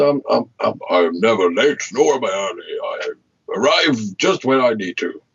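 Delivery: slow faked old wizard voice. Explaining why he always arrives early, quoting The Lord of the Rings, in Gandalf impression. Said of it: "that was a tremendous impersonation".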